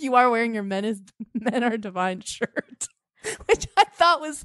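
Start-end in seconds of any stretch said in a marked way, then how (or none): 3.5-4.4 high, laughing through the words. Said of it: "I'm sorry, I'm laughing".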